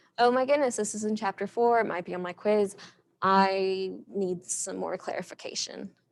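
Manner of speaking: normal talking voice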